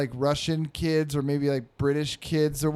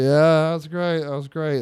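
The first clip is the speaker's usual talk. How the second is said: put-on distracted tone, louder, much slower; 6 dB louder than usual. Retelling a dad answering his kid without paying attention, mimicking a distracted dad. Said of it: "Like not paying attention".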